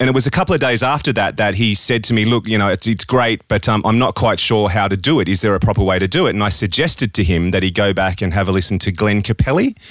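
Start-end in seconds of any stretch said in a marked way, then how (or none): none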